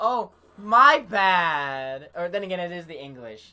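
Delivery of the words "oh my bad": very loud, sarcastic, annoying acted tone, "bad" drawled. Describing a favorite character's annoying way of talking: imitating Karma's annoying sarcastic talk. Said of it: "the way he talks is like".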